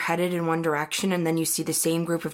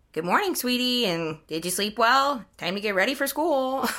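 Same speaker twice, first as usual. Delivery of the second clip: playful, pitched-up motherly voice; 6 semitones higher than usual. Retelling how someone joked in the morning: imitating Woodsley's mom act. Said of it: "he does this whole mom thing".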